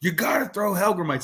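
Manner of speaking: mock freaked-out voice, very high and worked-up. Telling a story about a man who got angry: retelling a man freaking out. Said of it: "he starts freaking out".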